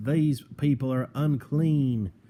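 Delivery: put-on high, slow southern accent. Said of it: "I took a southern accent right there".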